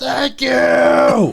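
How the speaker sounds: shrill, very high scream at full volume. Recounting how a guy screamed through the open window: retelling a scream. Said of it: "the guy just screams as loud as he can".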